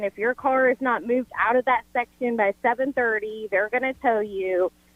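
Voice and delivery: ordinary talk, nothing marked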